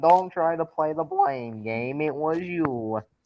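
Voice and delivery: knock-off cartoon frog puppet voice. Blaming another player for talking shit, in a Kermit the Frog ripoff voice. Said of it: "yo ass sounds like a Kermit the Frog ripoff".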